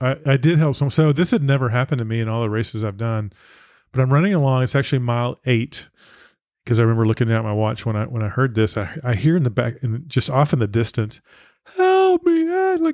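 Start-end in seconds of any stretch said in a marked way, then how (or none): 11.8-12.8 very high, crying out. Retelling hearing someone in the distance on a trail: imitating a cry for help. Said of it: "crying out for help".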